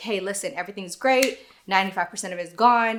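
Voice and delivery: ordinary talk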